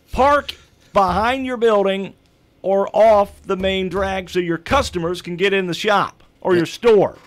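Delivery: shouting. Ranting to the hosts from a soapbox about downtown parking: yelling. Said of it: "I'm gonna yell this".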